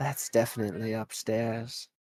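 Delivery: sly, slightly teasing, playful tone. A game narrator voicing the tiefling answering a player character's question: slightly teasing. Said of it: "in a slightly teasing fashion".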